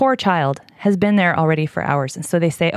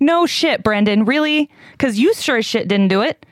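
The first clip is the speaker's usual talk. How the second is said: heated, worked-up, fired-up, pitched-up rant; 7 semitones higher than usual. Speaker recounting events to listeners called 'you guys', getting heated. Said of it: "sorry, I'm getting heated".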